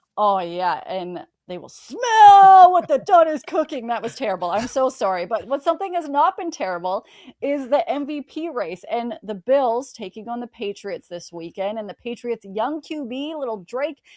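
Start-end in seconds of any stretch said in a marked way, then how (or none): 0.9-3.9 very loud, booming wrestler voice, "smell" drawn out. Asked by a co-host to do their best WWE impression, doing a wrestler voice. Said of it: "do your best WWE impression".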